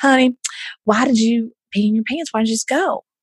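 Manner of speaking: put-on Houston-style southern accent. Retelling what Miss George said to the speaker in the classroom: imitating Miss George's southern voice. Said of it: "so I get the southern voice".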